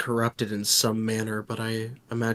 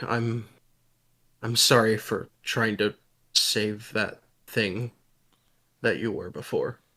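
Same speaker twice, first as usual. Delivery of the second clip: mumbled, indistinct delivery. Role-playing a character who mutters to them in Draconic: apologetic mutter. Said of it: "apologetic as he mutters to them".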